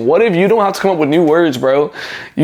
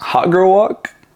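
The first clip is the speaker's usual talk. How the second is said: play-acted light, joking, playful tease; 3 semitones higher than usual. Giving advice to guys, the speaker acts out what they say to a girl: retelling a playful tease. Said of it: "I'm like".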